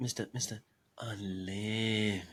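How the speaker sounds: hushed, intimate ASMR-style delivery. Repeating a nickname when asked for one more time: ASMR-style voice. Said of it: "That's some A S M R going there".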